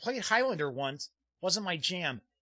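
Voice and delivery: ordinary talk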